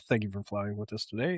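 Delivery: easygoing, mellow, soft airline-pilot announcement voice. Talking about a president's speaking style and imitating him: mellow Obama pilot voice. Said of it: "mellow passenger pilot way of talking".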